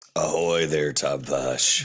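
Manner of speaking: swashbuckling pirate character voice. Hailing another character, in a pirate voice. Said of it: "I like that voice".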